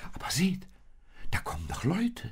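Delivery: amazed, astonished cry, pitched very high. Reading a Christmas story, a woman stepping into the still evening sees people coming: astonished. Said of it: "sagte Maria erstaunt".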